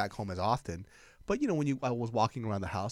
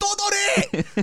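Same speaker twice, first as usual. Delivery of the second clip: very high, very loud, angry shrill shriek; 10 dB louder than usual. Retelling a mom and son arguing, retelling her scream. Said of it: "She's screaming".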